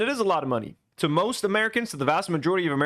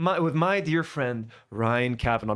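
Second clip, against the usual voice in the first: put-on theatrical sarcasm, lower and slower; 6 semitones lower than usual. Acting out a man's apology that he plays off as not serious, imitating a sarcastic, play-like apology. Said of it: "He's being so sarcastic about it. He's trying to do like it's a play".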